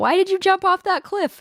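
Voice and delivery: very high-pitched angry yell. Retelling a video where a man in a suit yells: imitating someone yelling. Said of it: "he keeps yelling at him".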